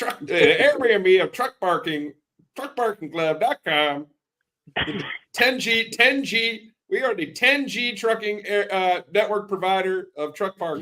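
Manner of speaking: exaggerated Southern twang, very high pitch. Redoing the Hunter impression after being asked for more twang: Hunter impression with more twang. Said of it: "You need a little bit more, more twang".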